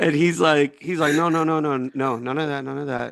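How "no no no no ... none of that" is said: put-on broken-English foreign accent. Retelling what a man said, imitating his accent from memory. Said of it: "I'm trying not to do an offensive accent".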